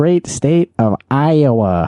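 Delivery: put-on very slow, high, played-up Fargo accent, Iowa stretched.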